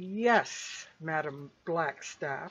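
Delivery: low, words pushed through gritted teeth. Two characters reply to a woman who has just given them orders; through clenched teeth. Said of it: "through clenched teeth".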